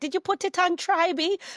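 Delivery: high-pitched, loud Jamaican mum voice. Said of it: "Every time she's like".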